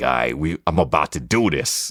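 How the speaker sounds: put-on heavy, hard New York Brooklyn accent. Retelling what he said on arriving at the studio, in a hard Brooklyn accent. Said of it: "I'm putting my New York accent, my my Brooklyn on hard".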